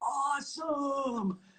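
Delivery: amazed exclamation. Retelling how the other speaker first reacted: Dave impression. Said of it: "you have an even better impression of, of me".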